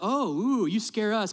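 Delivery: put-on sarcastic hyena voice, high, drawn-out, mocking. Retelling a cartoon scene where hyenas laugh at a cub: imitating mocking hyenas. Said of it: "the hyenas are laughing at Simba".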